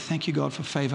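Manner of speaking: muttered under the breath. Recounting hearing someone was in town, the speaker replays their reaction under the breath. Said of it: "under my breath".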